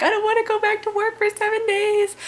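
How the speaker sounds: very high, tearful crying wail. Retelling being upset about working seven days in a row: imitating own crying. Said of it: "so I'm crying".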